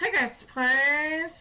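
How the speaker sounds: put-on loud, high, old-fashioned ticket-taker style calling voice. Showing how to ask for the tickets, say it in an old-timey voice. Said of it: "Gotta ask for the tickets in an old timey voice".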